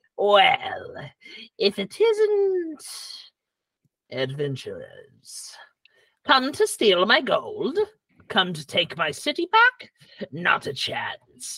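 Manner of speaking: swooping sing-song gnome villain voice, stretched "isn't". Voicing the evil Tixie Talkworth as she looks down at adventurers: Tixie Talkworth voice. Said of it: "she looks down at you and says".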